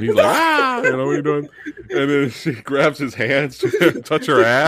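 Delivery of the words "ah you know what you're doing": scream, pitched higher. Retelling a Dracula scene where a woman touches Harker, imitating Harker screaming. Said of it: "he starts screaming".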